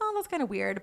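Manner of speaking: normal talking voice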